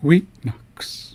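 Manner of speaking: first syllable weet of weetnux stressed. Explaining a pronunciation mark, stress on first syllable of Weetnux. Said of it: "we're placing emphasis on the first syllable".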